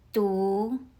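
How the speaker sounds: rising second tone, pitch going up. Showing learners how to say du in mandarin: rising second tone. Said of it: "Your voice rises like you're asking a question".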